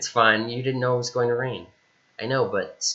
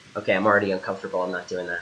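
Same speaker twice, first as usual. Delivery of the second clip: usual speaking voice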